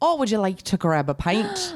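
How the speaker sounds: put-on Irish accent. Asked to do Irish, the speaker tries an Irish accent. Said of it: "Will you do Irish?".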